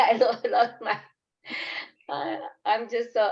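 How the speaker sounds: slow, halting, upset, distressed stammer with broken-off words. Answering questions about the past, losing train of thought: upset. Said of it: "I'm sorry, a little bit upset".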